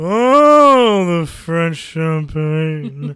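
loud, very slow, with "oh" drawn out. Showing the audience an Orson Welles impression. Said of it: "That's my Orson Welles impression".

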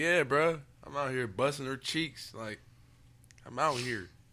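slow, self-assured, confident bragging. Showing another speaker how to answer about his woman: confident. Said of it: "Why you ain't say it confident?".

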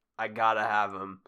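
ordinary talk

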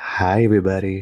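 put-on sultry, come-hither, seductive voice. Podcast guest greeting everybody: put-on seductive voice. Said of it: "I'm using my seductive voice right now".

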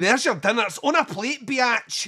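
imitation Scottish accent. Quoting a line from an amateur video: imitating a Scottish accent. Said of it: "the least sexy accent ever".

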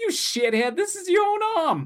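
very high talking-tumor creature voice. Recapping a scene where the tumor speaks to Joseph, talking tumor voice. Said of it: "I really like your voice for this tumor".

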